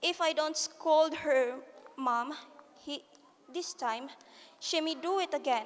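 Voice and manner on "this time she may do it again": ordinary delivery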